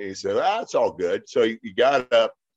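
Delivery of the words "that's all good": put-on Californian boy accent. Retelling what a former NFL player said after getting up, in a California boy accent. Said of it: "In that kind of California boy accent".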